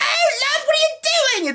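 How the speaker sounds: put-on grating woman's voice, very high. Describing how a short kid in a movie talks, do a Monty Python annoying woman voice. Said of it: "whenever the guys try to do really annoying women voices".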